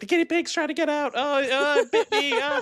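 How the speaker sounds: acted frantic, very high-pitched, panicked squealing freak-out. Retelling a movie scene where the daughter freaks out in the car: imitating a panicked daughter. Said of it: "the daughters freak out".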